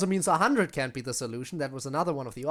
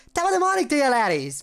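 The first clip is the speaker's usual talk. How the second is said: half-hearted put-on Irish accent, high and loud; 8 semitones higher, 6 dB louder than usual. Trying an impression after deciding to go higher, put-on Irish accent. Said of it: "I have to sound semi-Irish at least".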